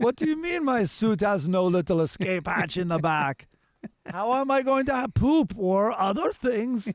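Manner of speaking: heavily laid-on fake Danish accent. Playing an astronaut complaining about a spacesuit: put-on danish accent. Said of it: "I'm nailing this Danish accent".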